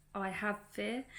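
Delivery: ordinary talk, nothing marked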